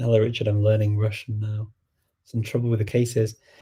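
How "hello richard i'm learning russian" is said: ordinary delivery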